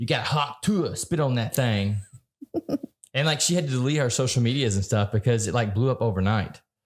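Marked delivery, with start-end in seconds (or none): 0.0-2.0 really thick, slow Southern drawl. Retelling a viral clip of a woman asked how to keep a man, thick southern accent. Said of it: "this really thick Southern accent".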